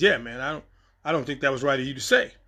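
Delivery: ordinary talk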